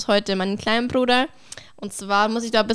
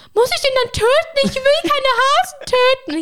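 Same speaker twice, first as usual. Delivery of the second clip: put-on, very high, loud, aghast horrified cry; 5 dB louder than usual. Retelling the reaction of the speaker's brother Noah, imitating horrified Noah. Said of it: "voll entsetzt".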